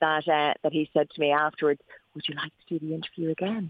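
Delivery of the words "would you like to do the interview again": very low, very gentle, soft voice. Retelling a driver's question after a race ride: low gentle Paul Newman voice. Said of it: "very low, very gentle voice".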